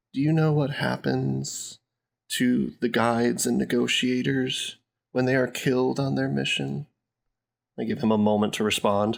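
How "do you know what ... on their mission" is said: hushed whisper. Leaning in toward a nervous guard who just stopped them, whispering. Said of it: "lean in towards this nervous guard that just stopped me and whisper to him".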